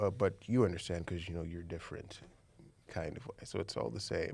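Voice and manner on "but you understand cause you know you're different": usual speaking voice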